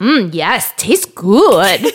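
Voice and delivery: slight mock German tourist accent. Quoting a young boy's reply after school, in a little German tourist accent. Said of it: "talks like a little German tourist".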